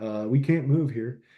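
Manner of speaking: put-on dry, sarcastic understatement. Retelling a radio call after the fuel line was cut: imitating Niehaus's sarcastic tone. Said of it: "that's just how he came over the radio".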